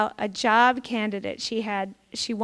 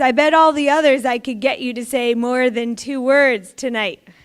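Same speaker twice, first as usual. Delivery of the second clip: very loud, showy, show-off socialite voice; 2 semitones higher, 8 dB louder than usual. Retelling a socialite seated beside a famously silent man, speaking in a very loud voice. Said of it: "she says in a very loud voice".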